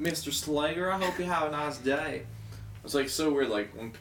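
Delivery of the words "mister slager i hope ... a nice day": put-on, pitched-up country accent. Quoting a Verizon phone rep who calls him Mr. Slager, country accent. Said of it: "The country accent chick?".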